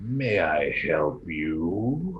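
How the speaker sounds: monster creature voice. Voicing a mind flayer who speaks into a player's mind: mind flayer voice. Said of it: "you hear a voice that says".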